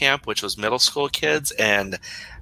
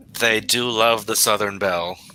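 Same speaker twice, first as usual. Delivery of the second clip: ordinary talk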